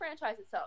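usual speaking voice

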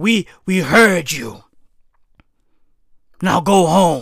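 deep, villain-like tone. Mocking a politician's speech about protesters: Justin Trudeau as a villain. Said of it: "why does Justin Trudeau sound like a fucking villain".

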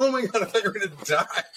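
high, fast, panicked freaked-out rush. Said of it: "freaking out".

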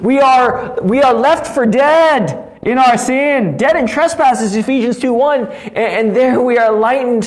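full high-pitched preacher-style yell. Talking about the gospel alone in a room, the speaker is yelling. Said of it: "I'm yelling again".

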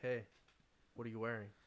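low, hushed, almost seductive murmur. Retelling a prank phone call a friend received, imitating a seductive voice. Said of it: "very like almost seductively".

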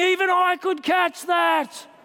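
play-acted, high-pitched, heckling fan scream. Retelling shouting at players who drop the ball: retelling own screaming. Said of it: "I'm screaming".

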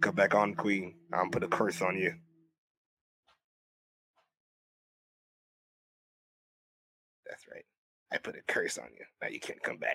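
wicked, evil villain voice, hushed and breathy whisper. Teasing someone called Queen in a put-on voice; evil villain voice.

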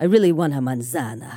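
deep Italian gangster boss delivery. Quoting what she said to the speaker in Spanish, Italian mob boss voice. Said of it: "she says it like an Italian mob boss".

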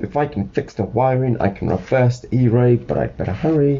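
ordinary delivery, nothing marked

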